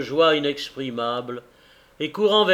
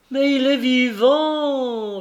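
joyful, pitched-up cry, "vivant" stretched long; 9 semitones higher than usual. Dot answers Caleb's question about his son, a joyful cry. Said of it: "cria Dot".

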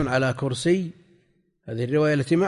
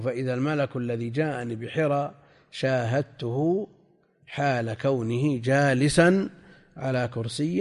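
ordinary talk, nothing marked

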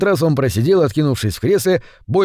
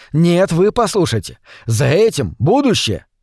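ordinary delivery

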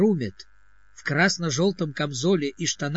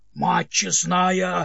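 loud roared, bellowing shout; 3 semitones higher than usual. Narrating a man reacting to a grimacing dwarf, roaring. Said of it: "заревел Димок".

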